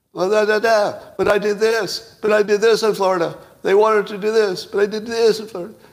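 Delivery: very high, loud, whiny, pleading tone. Imitating Ron DeSantis making a point: imitating Ron DeSantis's whiny pleading voice. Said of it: "listen to his voice for the pleading".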